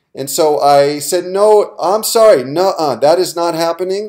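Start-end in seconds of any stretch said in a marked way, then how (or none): 1.3-4.1 steady, no-nonsense, firm but calm, pitched up. Recounting taking a stand in a line, the speaker quotes themself: retelling a firm but calm refusal. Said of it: "in a very firm but calm voice".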